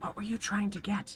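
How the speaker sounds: close, hushed, secretive whisper. Game master plays a Kenku leaning over to a player's character on a bench, whispering. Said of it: "it kind of whispers to your to your ear".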